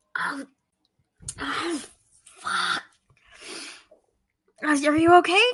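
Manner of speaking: urgent, panicky, frantic whisper. Game narrator voices Parma checking on the speared guard Drake: Parma's frantic whisper. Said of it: "Parma whispers like frantically".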